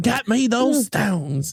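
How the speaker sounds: put-on Southern accent in a villain voice. Quoting the Southern villain's line from the movie: imitating Gary Oldman's Southern villain. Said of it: "That was him".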